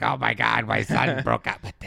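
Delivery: creaky, boozy, raspy, rough smoker's voice. Retelling an actress's line from a show: imitating a raspy smoker's voice. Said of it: "got a really raspy, she smoked and drank way too much voice".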